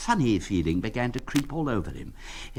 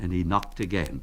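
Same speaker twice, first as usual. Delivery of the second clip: ordinary delivery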